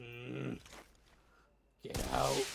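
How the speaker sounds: rough-edged, creaky little cat voice. Retelling how his cat looked at him from a bucket: voicing his cat. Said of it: "he's just like".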